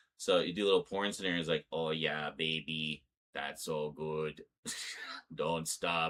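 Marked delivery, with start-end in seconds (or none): 1.8-6.1 flat, slow, emotionless, robotic monotone. Retelling what the robot says in a scenario, in a flat emotionless robot voice. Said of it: "completely flat, emotionless robot voice".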